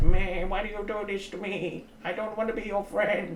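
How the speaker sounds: high, bleating goat voice. Showing off one of your crazy voices, speaking like a goat. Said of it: "kind of speaking like a goat".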